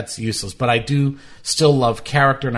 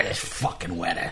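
put-on old man voice, lower and quieter; 5 semitones lower, 8 dB quieter than usual. Describing an old man with a cigar, voicing how he'd talk, made-up old guy voice. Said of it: "I'll make a voice for them like".

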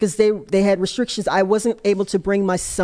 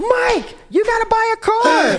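mock shrill, very high, drawn-out yell; 14 semitones higher, 3 dB louder than usual. Retelling the husband's reaction to winning a car: imitating husband yelling. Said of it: "he yells".

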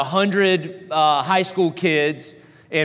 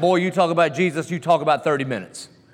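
short, curt, barked delivery. Retelling how the old Southern coach talked: imitating the coach barking. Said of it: "he kinda barked".

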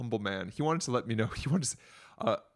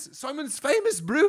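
rough, very high, loud put-on Kiwi accent; 5 dB louder than usual. Imagining university students finding them tagged on Facebook, the speaker uses an attempted Kiwi accent. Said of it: "I can't really do a Kiwi accent".

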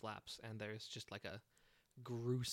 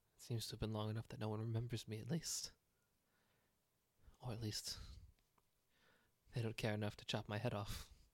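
resigned, darkly joking fatalistic tone. Playing an exile answering questions about his past, in a fatalistic joking way. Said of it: "In a very, like, fatalistic kind of way".

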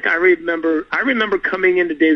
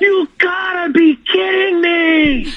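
very high, stretched-out, drawn-out shrieking scream; 13 semitones higher, 3 dB louder than usual. Recalling coming out into the hallway in the outfit, retelling a scream. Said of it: "and I just screamed".

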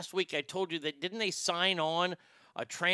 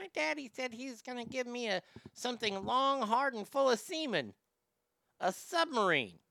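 put-on high-pitched small child's voice; 6 semitones higher than usual. Retelling a comedy bit they once did, the speaker does the little kid voice. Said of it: "And then I did the little kid voice".

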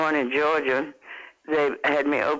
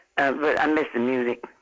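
usual speaking voice

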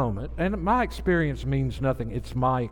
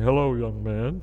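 grand, theatrical, dramatic preacher voice; 4 semitones lower than usual. Retelling how Phil greeted him: Phil's dramatic preacher voice. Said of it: "he had this big dramatic thing".

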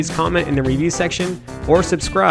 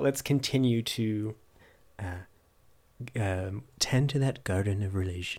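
put-on buttery voice, lower and quieter; 6 semitones lower, 13 dB quieter than usual. Closing a chat with a co-host and the listeners, in a put-on buttery voice. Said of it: "I'm trying to do my buttery voice".

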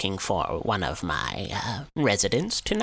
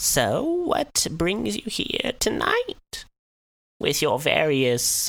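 put-on withered, high, slow elderly woman voice; 6 semitones higher than usual. Game master voicing an elderly woman character, elderly woman character voice.

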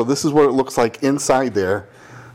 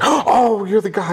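put-on thrilled, eager receptionist voice, high, drawn out; 8 semitones higher than usual. Telling a story, the speaker quotes the receptionist greeting him, imitating an excited receptionist. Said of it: "And she gets all excited".

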